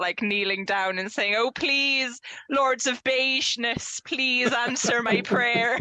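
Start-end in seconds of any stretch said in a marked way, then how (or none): 1.4-5.8 put-on Cornish accent, slower. Recalling a favorite campaign scene, imitating Chloe's Cornish accent. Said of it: "Chloe in her Cornish accent".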